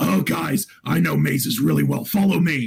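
gruff, rough, creaky beast-man character voice. Retelling how the minotaur barbarian led the party through a maze: minotaur barbarian voice. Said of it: "the character's voice, because he was a minotaur".

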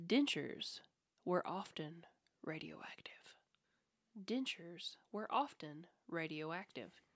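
dramatic voice, delivered close and intimate. Reading out a truth-or-myth quiz statement, close dramatic voice. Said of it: "I'm going to get close and do my dramatic voice".

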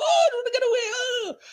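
put-on terrified, desperate voice. Retelling how a character reacts when the thing busts out: imitating a terrified, desperate character. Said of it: "he's terrified, he's desperate, he's like".

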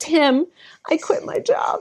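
mock crying, tearful, high-pitched, slow words. Retelling calling a friend after quitting, imitating own crying.

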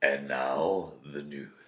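low, slow, menacing, ominous voice. Trying out voices for a news intro, sinister voice. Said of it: "That was more sinister".

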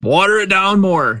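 very high, shrill yell heard from a distance. Game master voicing Marvin answering from the back of the inn: Marvin yelling from the back. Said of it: "Marvin yells from the back".

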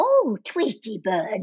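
heavily put-on old person voice. Demonstrate how June's voice differed from Bee's, using June's put-on old voice. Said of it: "She really put on an old voice".

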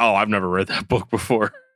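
imitated mock-deadpan tone. Retelling how an artist answered the speaker's question about his album, imitating a deadpan reply. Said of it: "just deadpan".

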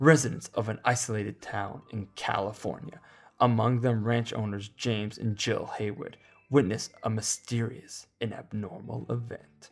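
slow, epic movie-trailer announcer voice. Introducing a film's premise, read in the movie guy voice. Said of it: "with the movie guy voice".

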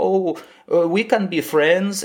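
put-on thick, laid-on Eastern European accent. Criticizing a show's scene, the speaker quotes a character in a weird eastern european accent. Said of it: "just like a weird Eastern European accent".

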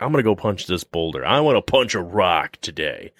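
ordinary talk

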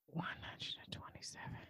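unvoiced, amazed whisper.

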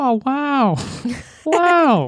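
bad, very high, swooping, erratic squeaky exclamation. Saying wow in a horrible Owen Wilson impression. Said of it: "That was a horrible impression".

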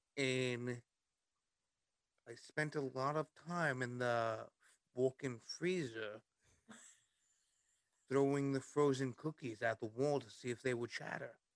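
put-on Liverpool accent, kept up. Asked about past jobs, the guest answers in a liverpool accent. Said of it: "I'll keep up the Liverpool accent the rest of the night".

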